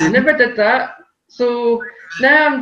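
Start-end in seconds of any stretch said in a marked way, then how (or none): 0.0-1.0 talking through laughter. Retelling getting a letter from a bank: imitating own laughing while talking. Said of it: "I'm sitting there laughing".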